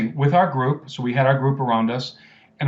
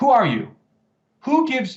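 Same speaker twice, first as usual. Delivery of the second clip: put-on yelling, higher; 10 semitones higher than usual. Retelling how an official site guide confronted them: imitating someone yelling. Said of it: "he suddenly starts yelling at me".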